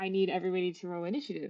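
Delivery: ordinary delivery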